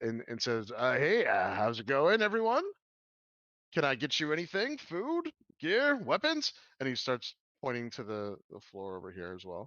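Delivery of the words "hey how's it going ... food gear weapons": put-on older character voice, high and swooping. Narrating a game scene as a man greets the arriving group: voicing the greeting older man. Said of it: "he actually greets you and says".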